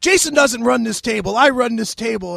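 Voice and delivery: put-on gruff, furious bark, loud and rough. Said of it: "he's like yelling at me".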